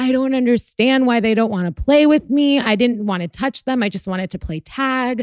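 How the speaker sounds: put-on crying, bawling little boy's voice. Retelling a child's words after other kids refused to play: imitating a child bawling. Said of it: "he starts bawling".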